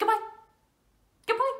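very high pitch, very fast, rushed delivery. Leading a goodbye game, saying goodbye as fast as possible: very fast. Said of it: "Let's say goodbye as fast as we can".

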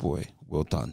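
ordinary delivery

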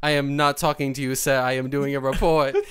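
put-on deadpan delivery. Retelling a woman doing a report answering a man who yelled at her, imitating a deadpan reply. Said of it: "She just deadpan turns her face".

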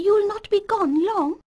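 worried, anxious, very high-pitched voice. As the boy gets ready to ride off, a woman asks him, anxiously. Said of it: "Ma Baxter asked anxiously".

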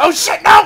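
loud, high-pitched panicked shout.

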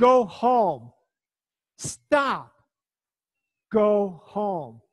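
very loud, very slow, commanding voice. Retelling facing a dog charging them, the speaker orders it home, retelling a commanding order. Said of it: "in a commanding voice".

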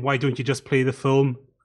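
plain

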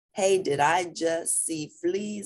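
ordinary delivery

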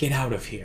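resigned, under breath. Speaker explaining how line delivery changes the other actor's response, under breath, already defeated. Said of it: "almost under my breath, like, almost already defeated".

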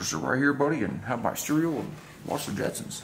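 sitcom cartoon father voice. Showing an old television set to a buddy, doing a George Jetson impression. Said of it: "That's his George impersonation".

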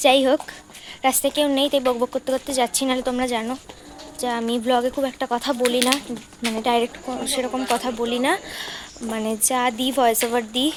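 very soft, hushed speaking. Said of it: "একদম আস্তে আস্তে কথা বলছি আমি".

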